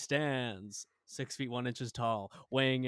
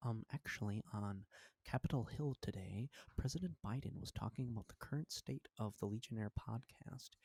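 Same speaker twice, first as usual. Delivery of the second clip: put-on affected, self-important radio announcer voice; 10 dB quieter than usual. Mocking how people on the radio talk: imitating pretentious NPR voice. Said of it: "everybody's on N P R sounds so pretentious when they talk".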